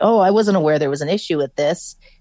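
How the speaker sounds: normal talking voice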